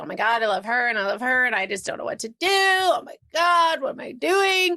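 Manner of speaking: upset, anguished, torn and fretting voice. Retelling a roommate's account of Dana torn between two women: imitating Dana upset. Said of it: "Dana was upset in February and March".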